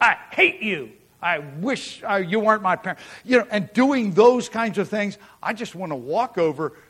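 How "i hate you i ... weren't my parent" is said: very mean, nasty tone. Imitating a young person talking to their parents, imitating a nasty tone. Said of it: "in a very nasty tone of voice".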